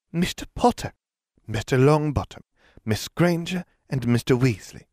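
high, affected, put-on simpering voice. A woman flanked by aurors summons four students, simpering. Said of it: "she simpered".

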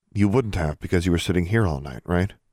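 ordinary delivery

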